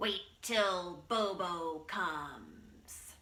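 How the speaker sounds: wild, snarling bobcat voice. Telling a story to a group, voicing the bobcat's snarl. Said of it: "it snarled at him".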